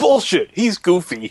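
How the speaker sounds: re-enacted furious scream. Retelling a car ride, imitating dad screaming: imitating dad screaming. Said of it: "my dad just screaming".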